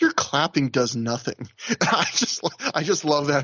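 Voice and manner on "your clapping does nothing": withering, dismissive brush-off tone. Recapping a match, quoting what a performer said to the crowd, mimicking a dismissive tone. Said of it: "in this very dismissive tone".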